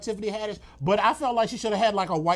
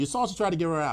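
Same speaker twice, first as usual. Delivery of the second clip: ordinary delivery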